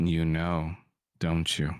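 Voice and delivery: whispered gruff cowboy voice. A game master voices a character whispering to a player, gruff cowboy whisper. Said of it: "whispers in a gruff cowboy voice".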